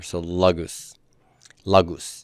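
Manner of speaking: lagus with stressed, low first syllable. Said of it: "The accent's gonna be on first syllable here".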